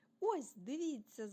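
loud shouted call. A winged creature shouts to his friends, then flies up: shouted. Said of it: "закричав Альф".

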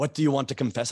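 put-on, angry-sounding Eastern European accent. Retelling a confession with a priest, imitating him in a mock-angry Eastern European accent. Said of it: "some sort of angry Eastern European".

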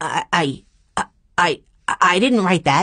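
stuttering, halting, stammering speech. Just told he is fired over a letter, he denies it, stuttering. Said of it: "he stuttered".

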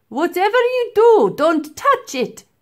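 loud, very high-pitched shout. The professor warns the girl not to touch the mammoth, shouted. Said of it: "shouted the professor".

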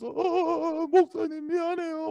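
crying, high, soft and tearful.

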